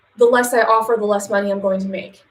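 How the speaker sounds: ordinary delivery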